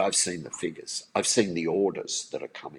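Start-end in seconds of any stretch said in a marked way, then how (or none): none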